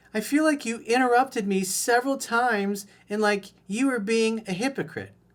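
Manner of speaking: high-pitched, playful put-on girly voice. Reading out a text message from her, in a put-on girl voice. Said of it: "I'll do my girl voice".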